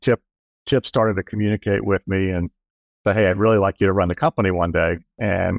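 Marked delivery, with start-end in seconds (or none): none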